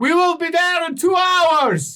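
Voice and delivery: high, loud yell over heavy noise. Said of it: "As she yells down".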